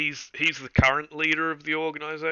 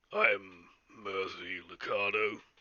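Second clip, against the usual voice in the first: gruff voice, low, soft and quiet; 6 semitones lower, 6 dB quieter than usual. A game master introducing a character to the players, in a gruff Mercy Lucado voice. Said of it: "it's got a bit more of a gruff voice".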